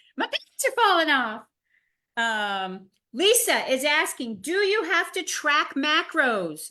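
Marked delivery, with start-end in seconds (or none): 0.2-2.8 put-on heavy, drawn-out Southern accent, big drawl. Telling about a meeting member's win of the week, imitating Connie's big Southern drawl. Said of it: "She's got a very big Southern drawl".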